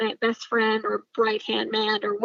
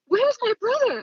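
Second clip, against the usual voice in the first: mock, very high, shrill, angry screaming; 13 semitones higher than usual. Speaker retells confronting a man, retelling own yelling at him. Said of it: "I'm like just yelling at him".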